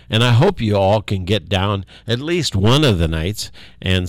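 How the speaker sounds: usual speaking voice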